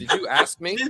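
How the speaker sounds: put-on old-school homegirl voice. Retelling what the woman letting them in said: imitating an old-school homegirl. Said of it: "it's like".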